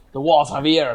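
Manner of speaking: really bad fake French accent. Recalling a line from a primary school play role, in a really bad French accent. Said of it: "Like a really bad".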